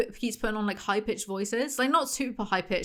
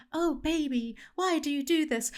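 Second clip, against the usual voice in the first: gentle, soft, high, girly put-on old-movie woman's voice; 6 semitones higher than usual. Complaining about how a man voices the women in Silo, imitating his soft women's voices. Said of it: "the soft voices that he's putting on".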